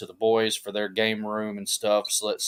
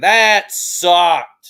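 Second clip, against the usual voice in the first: put-on very loud, blunt, high-pitched kid holler; 8 semitones higher, 10 dB louder than usual. Retelling what a son did at a wrestling show: imitating a kid hollering. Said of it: "he just starts hollering".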